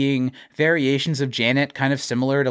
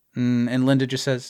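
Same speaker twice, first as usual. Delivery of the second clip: ordinary delivery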